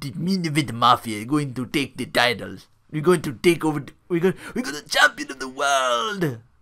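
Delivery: put-on poorly done Jamaican accent. Imitating a wrestling commentator's TNA promo: Booker T's bad Jamaican accent. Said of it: "he does that really bad Jamaican accent".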